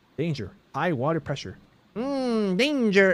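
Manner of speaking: high, swooping, bouncy, goofy cartoon voice. Facing a locked way and high water, talking to a companion, SpongeBob voice. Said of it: "I don't know why I did that voice".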